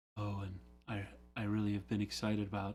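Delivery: super mellow, smooth public radio host delivery. Recalling how both girls talked into their microphones: mellow NPR radio voice. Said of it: "talking in their microphones, like".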